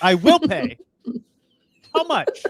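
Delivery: put-on aggressive tone. Retelling an exchange with a man at a window about paying, retelling a slightly aggressive reply. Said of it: "I've now gotten a little aggressive".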